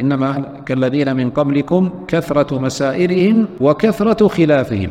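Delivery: normal talking voice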